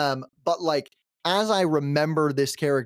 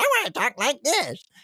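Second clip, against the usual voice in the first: very high, terrible, put-on demon voice; 9 semitones higher than usual. Describing a character voice they tried, the speaker demonstrates a high-pitched character voice. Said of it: "I went for this like high pitched".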